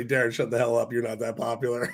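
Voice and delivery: plain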